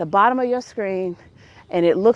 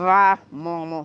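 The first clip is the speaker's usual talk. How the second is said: acted clenched-teeth speech, lower pitch; 3 semitones lower than usual. Retelling ending a call with the speaker's mama: retelling through clenched teeth. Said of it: "through clenched teeth".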